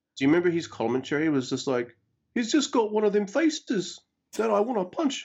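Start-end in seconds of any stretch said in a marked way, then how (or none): 2.3-5.2 clumsy, very high-pitched put-on New Zealand accent. Recalling Fale's English commentary for New Japan, do a really bad Kiwi impression of Fale. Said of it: "That's my really bad Kiwi impression".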